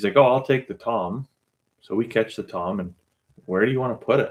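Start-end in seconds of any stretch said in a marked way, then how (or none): 0.1-1.3 put-on thick Eastern European accent, laid on, pitched up. Retelling what a man who showed up said, in a thick eastern european accent. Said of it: "the thick Eastern European accent too".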